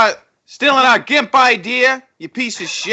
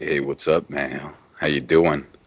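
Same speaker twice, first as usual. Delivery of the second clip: put-on very low, deep, older-sounding voice; 7 dB quieter than usual. Told to flirt with someone, a speaker greets him in a put-on deep voice. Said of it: "your voice dropped by like 2 octaves".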